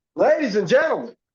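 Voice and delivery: high talk-show host announcer voice. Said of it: "it's like Jerry Springer".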